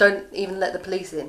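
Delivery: ordinary delivery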